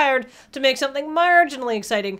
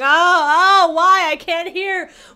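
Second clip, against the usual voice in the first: mock very slow, high, drawn-out pained whimpering; 5 semitones higher, 5 dB louder than usual. Speaker acts out a victim clutching their bleeding ears, mock-pained deafened victim. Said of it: "clutching their ears, bleeding, and going".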